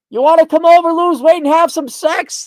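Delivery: loud, carrying call. Imagining calling across a wide canyon with echoes: yelling across a canyon. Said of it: "And you can yell, like".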